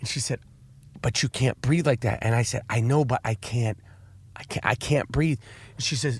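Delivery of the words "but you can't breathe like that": soft, quiet, hushed yoga-teacher voice. Retelling what a yoga instructor said to them, imitating a quiet yoga voice. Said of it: "They all have their yoga voice".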